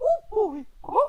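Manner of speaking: high, loud, bouncy squeaky voice. Showing off impressions, the speaker does a Mickey Mouse impression. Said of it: "That's my Mickey Mouse impression".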